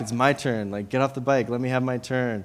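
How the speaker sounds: normal talking voice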